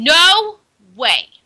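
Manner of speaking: stern and firm. Narrating a story as Amanda refuses Daryl's begging, stern. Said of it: "Amanda replied sternly".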